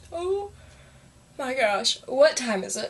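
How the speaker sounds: speaking through a yawn. Talking to viewers at seven o'clock after a rough day: yawning. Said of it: "I'm yawning so bad".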